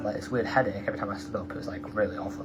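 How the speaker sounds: really fast, rushed talking.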